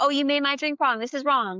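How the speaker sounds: put-on annoyed, accusing, angry griping voice. Retelling a customer who comes in hot, imitating an angry customer. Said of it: "they're mad".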